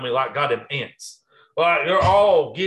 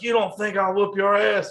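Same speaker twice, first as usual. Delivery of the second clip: put-on angry, menacing, high, mad voice; 7 semitones higher than usual. Retelling how a man threatened him: imitating an angry threat. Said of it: "he gets fucking mad".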